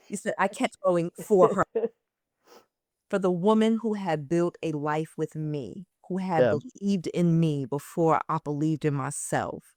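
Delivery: fighting to keep from crying. Speaker reads a written message aloud, holding back tears. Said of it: "like I can't read this without crying".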